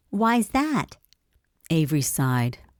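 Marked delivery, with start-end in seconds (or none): 0.1-0.9 thin, squeaky, high-pitched voice. Reading a story aloud, voicing a lady's question in a high-pitched voice. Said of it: "asked in a high-pitched voice".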